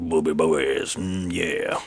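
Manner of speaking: very low, leering cartoon wolf voice. Retelling what the wolf says after the attack: imitating the wolf's voice. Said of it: "And he's like".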